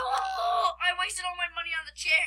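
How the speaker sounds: slow, high, loud wailing yell. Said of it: "You are loud".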